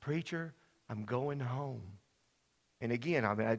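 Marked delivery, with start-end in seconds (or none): 0.0-1.8 faint, very quiet, barely-there half-whisper. Retelling a dying friend's words in the night: imitating Clyde half-whispering quietly. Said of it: "he just kept whispering to me real quietly".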